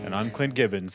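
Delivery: flat monotone delivery. Second host introducing himself at the show's start, very monotone. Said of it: "delivering a very monotone intro".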